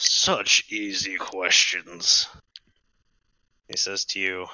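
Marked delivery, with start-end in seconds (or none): 0.0-2.3 echoing, reverberating voice. Voicing a being whose voice echoes out to the players: echoing voice. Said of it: "so the voice echoes out".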